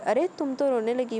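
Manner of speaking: usual speaking voice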